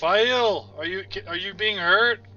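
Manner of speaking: super loud booming voice. Player voicing a character's reaction in the game, super loud booming voice. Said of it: "like super loud booming voice".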